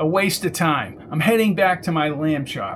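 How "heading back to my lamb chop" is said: ordinary delivery, nothing marked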